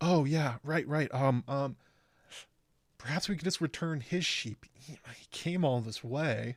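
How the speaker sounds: naive, sweet little voice. Recapping a scene, speaker quotes Aegon's reply in a naive sweet little voice. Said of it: "like sweet little voice of all time".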